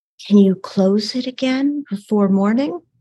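whispered line in put-on voice. Voicing a tired adventurer leaning in to a companion: whispering in character. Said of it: "and kind of whisper".

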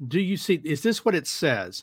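ordinary delivery

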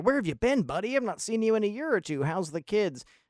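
mock overjoyed, happy, excited, high and quick. Acting out how he was greeted back in the first chapter, mock-excited and happy. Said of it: "excited to see him and so happy".

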